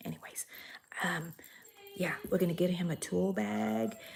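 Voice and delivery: secretive, hushed whisper. Planning a gift for him so that he doesn't hear, whispering. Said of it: "I'm whispering so he doesn't hear me".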